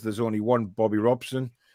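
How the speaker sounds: plain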